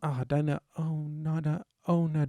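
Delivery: soft, very slow, drawn-out delivery. Showing off an impression to the others after announcing it, Zendaya impression. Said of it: "Here's my Zendaya impression".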